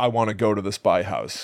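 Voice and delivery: plain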